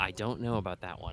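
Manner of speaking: muttered under breath. Describing a van scene, speaker repeats what someone says, muttered under breath. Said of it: "you probably hear un- Mel talk under her breath".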